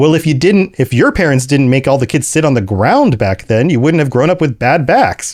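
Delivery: cheeky, smart-mouthed, snarky tone. Retelling a childhood comeback to the adults: imitating own snarky retort. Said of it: "my snarky response was".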